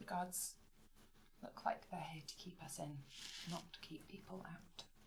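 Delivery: quiet, hushed whisper. Speaking in character to companions in a crowded place: speaking quietly. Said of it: "I will quietly say".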